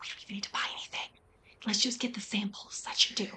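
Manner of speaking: very quiet, private-sounding whisper. Speaker reenacts whispering to him before trying the samples, retelling a whisper. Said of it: "I whisper to him".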